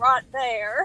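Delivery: imitated Southern accent. A parent repeats how their son says a phrase, imitating a southern accent. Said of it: "he says it with a southern accent".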